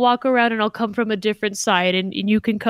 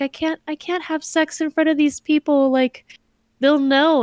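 put-on shy, hesitant man, much higher pitch; 5 semitones higher than usual. Retelling a couple's story, the speaker acts out the man's reply to her, acting out a shy man. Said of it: "he's all shy".

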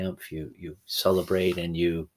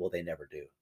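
muttering under breath, quieter; 9 dB quieter than usual. Retelling the wife's reply to his story: muttering under breath. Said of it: "she mutters under her breath".

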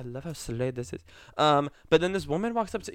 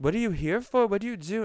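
woman's voice with raised pitch; 6 semitones higher than usual. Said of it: "I'm trying to mimic her voice".

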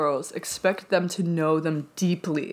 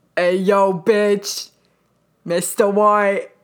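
put-on slangy dude voice, louder; 6 dB louder than usual. Doing a Jesse Pinkman line for another speaker: Jesse Pinkman impression. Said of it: "I sound like Jesse Pinkett".

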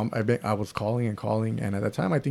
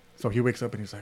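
ordinary delivery

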